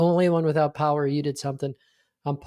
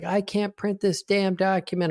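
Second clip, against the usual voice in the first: put-on mild irate half-shouted yell; 4 semitones higher than usual. Retelling a client's angry phone call: imitating someone screaming. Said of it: "calls screaming at me".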